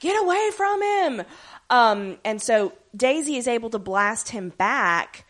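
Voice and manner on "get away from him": put-on, very high, urgent scream. Retelling a scene, acting out Fitzsimmons screaming. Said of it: "Fitzsimmons are running in screaming".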